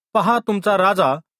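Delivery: plain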